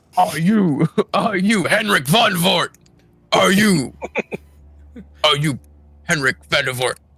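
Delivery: low intimidating, menacing voice. Confronting a man with a sword drawn, pointing at him: intimidating voice. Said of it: "I say with the sword and an intimidating voice".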